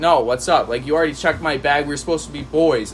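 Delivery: ordinary delivery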